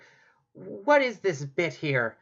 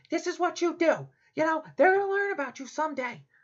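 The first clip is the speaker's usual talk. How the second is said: shrill, screaming rant; 8 semitones higher than usual. Retelling a story of a cast-down angel in hell: Lucifer screaming at ceiling. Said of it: "screaming at the ceiling".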